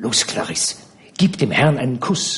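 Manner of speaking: soft murmur, half under the breath. Focherie urges clarisse toward the gentleman, murmured. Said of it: "raunte Focherie".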